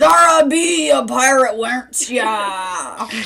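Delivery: put-on pirate voice with drawn-out ya. Speaking to Zara, in a pirate voice. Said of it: "I'm gonna try the whole time".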